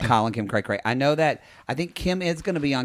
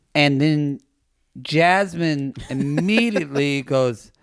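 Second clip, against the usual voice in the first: usual speaking voice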